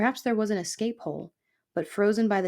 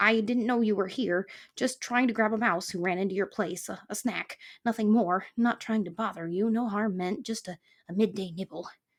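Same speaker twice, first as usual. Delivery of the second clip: sniveling, groveling, placating, eager-to-appease voice. Narrator voices Fox answering Aerith, in Fox's sniveling voice. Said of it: "Fox returned in a voice that was at best sniveling. / and if I tell him, / Fox returned in a voice that was at best sniveling".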